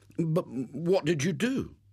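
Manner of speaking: stammering. William asks Jimmy what he did, stammering. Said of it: "stammered William".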